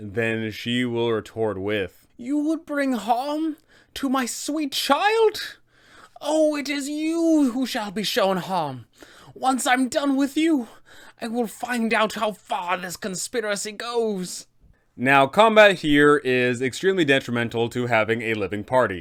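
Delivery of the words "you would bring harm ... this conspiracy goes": shrill, very high-pitched villain voice fired back. A DM voicing a villain's retort to players opposed to Strahd, Baba Lysaga voice.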